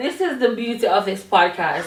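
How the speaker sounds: cracking up laughing while talking. Podcast co-host losing it with her co-host, cracking up laughing. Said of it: "I'm cracking up".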